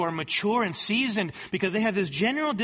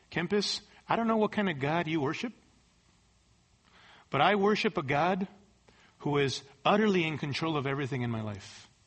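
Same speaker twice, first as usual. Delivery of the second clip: put-on calm voice, lower; 5 semitones lower than usual. Retelling what he would say to the speaker, imitating a calm voice. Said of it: "just very calmly".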